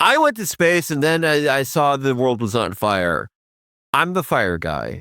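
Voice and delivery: normal talking voice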